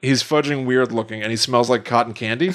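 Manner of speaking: ordinary talk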